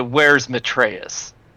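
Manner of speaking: very stern, hard, severe tone. Role-playing their character questioning the halfling, in a very stern voice. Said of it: "In like a very stern voice".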